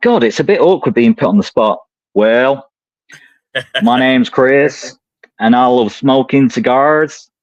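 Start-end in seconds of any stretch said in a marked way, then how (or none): 3.8-7.2 fake, put-on American accent. Put on the spot to do an accent, speaking in a put-on american accent. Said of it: "an American accent".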